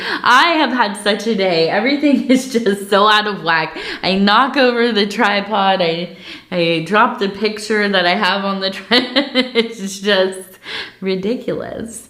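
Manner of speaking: words broken up by laughs, talking through laughter. Apologizing after knocking over the tripod, laughing while talking. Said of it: "I'm sorry, I'm laughing".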